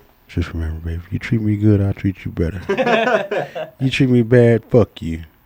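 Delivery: very low, bass-heavy, put-on seductive voice. Host signing off the show to listeners, in a put-on sexy voice. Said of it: "Let me put on my sexy voice".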